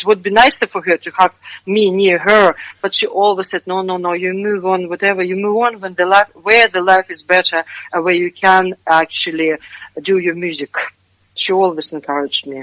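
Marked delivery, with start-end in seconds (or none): none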